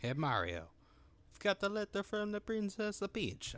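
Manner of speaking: soft, high put-on Italian accent. Streamer reading Paper Mario dialogue aloud, in an Italian accent. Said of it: "my Italian accent is so great".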